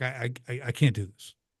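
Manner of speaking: put-on tearing-up voice. Retelling a meeting where a man stood up to leave, imitating someone tearing up. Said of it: "he's like tearing up".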